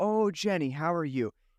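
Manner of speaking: slow, polite, friendly, cordial delivery. Describing a character's visit, imitating him greeting Jenny in a mock-cordial way. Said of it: "he's kind of cordial".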